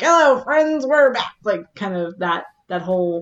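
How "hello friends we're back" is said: put-on old-time radio announcer voice, pitched up. Describing how the radio announcer starts things off, old-school radio announcer voice. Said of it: "very much like the old school radio".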